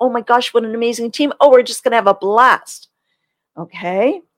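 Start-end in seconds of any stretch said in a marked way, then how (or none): 0.0-2.9 bubbly, gushing, fast, excited delivery. Demonstrating how to talk to peacocks, the speaker sounds fast, loud and excited. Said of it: "you have to sound excited. You have to speed up your voice. You might have to speak more loudly".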